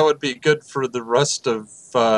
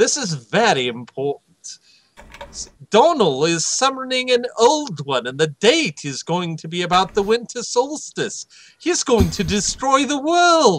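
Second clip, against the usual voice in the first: put-on British accent, a bit higher pitched; 8 semitones higher than usual. A player voicing Bungo to the group, in a British accent. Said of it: "In the British accent".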